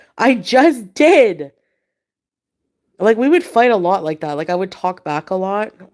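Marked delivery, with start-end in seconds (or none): 0.2-1.5 mock panicked, high, loud, freaked-out delivery. Retelling a fight after being told to clean: imitating freaking out. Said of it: "I freaked out".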